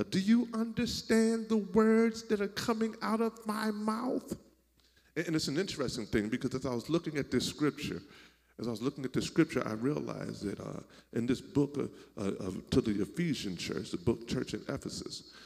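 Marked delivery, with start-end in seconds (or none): 0.1-4.4 acted very high, shrill, very loud screaming. Retelling a movie scene to an audience: retelling Chris Tucker's loud scream. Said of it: "screams in a real loud voice".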